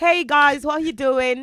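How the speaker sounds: slow, high-pitched fake British accent. Greeting everyone after saying she used the wrong accent: put-on british accent. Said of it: "I'm using the wrong accent".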